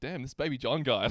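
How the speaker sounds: normal talking voice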